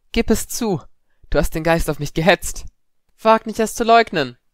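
faintly quivering voice. Narrator reading a student's outburst at a classmate, voice trembling slightly. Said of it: "Padmas Stimme zitterte leicht".

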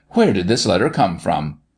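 plain

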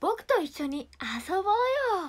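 put-on cartoon hero voice. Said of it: "じゃあ僕アンパンマン".

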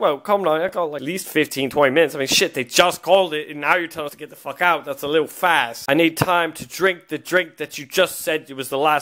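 ordinary talk, nothing marked

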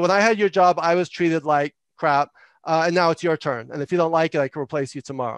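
ordinary talk

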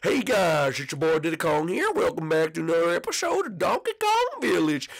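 high, swooping country Western accent. Speaker demonstrating Donkey Kong character voices, as Diddy Kong: country Western accent. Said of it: "like Western accents".

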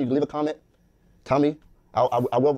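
speaking with a stutter. Speaker signing off a video to viewers, stuttering. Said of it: "I'm stuttering".

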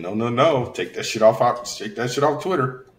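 ordinary talk

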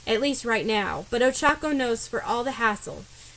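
plain

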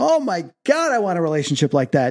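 crying hard, bawling, swooping sob-talk. Recalling watching a man tell his girlfriend he loves her, retelling bawling. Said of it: "I'm bawling going".

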